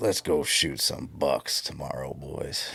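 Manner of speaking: put-on worn-out, deep, rough old smoker's voice. Quoting something a man always said, the speaker uses a deep old smoker's voice. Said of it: "in that deep old smoker's voice".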